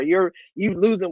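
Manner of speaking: ordinary talk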